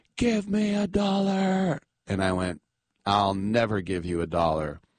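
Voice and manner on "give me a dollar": put-on slow, very high, drawn-out scream. Retelling an encounter, voicing the guy who screamed at the speaker. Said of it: "And then he screamed".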